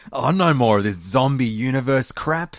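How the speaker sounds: exasperated scolding father voice. Speaker imitates an angry dad describing his son's passions: mock angry dad voice. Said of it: "You just sound like an angry dad".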